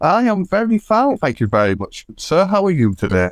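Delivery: regal, grand, high sing-song polite voice. Greeting the host and asking how they are: sounding regal. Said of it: "you sound so regal".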